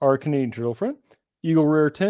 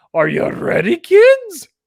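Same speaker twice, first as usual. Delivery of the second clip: put-on pirate accent, higher and louder; 14 semitones higher, 9 dB louder than usual. Calling out to another speaker in a SpongeBob pirate voice. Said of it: "was my accent more SpongeBob pirate than Irish".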